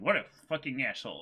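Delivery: breezy, matter-of-fact, fast, offhand casual delivery. Retelling what a man at the counter said without hesitation: mock-casual delivery. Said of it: "Like with the most like casual delivery".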